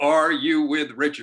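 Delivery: big, loud, booming put-on German accent. Retelling a man's question to them in the elevator, booming German accent. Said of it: "big booming German accent".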